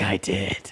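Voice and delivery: mock eerie, unsettling delivery in a soft, creepy voice. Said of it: "You sound creepy as fuck".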